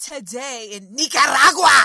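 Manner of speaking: very loud, exaggerated, over-enunciated Spanish accent. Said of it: "It was like over enunciating".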